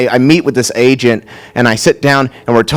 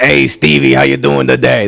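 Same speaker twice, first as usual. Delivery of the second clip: imitated New York accent. Imitating the speaker's dad greeting the speaker, in a new york accent. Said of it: "My dad's like a very New York guy".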